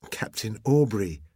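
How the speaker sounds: ordinary delivery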